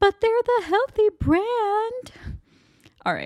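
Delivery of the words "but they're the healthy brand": acted voice, much higher. Acting out a juice-box argument between mom and daughter, speaking as the daughter. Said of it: "I put on my best acting voice".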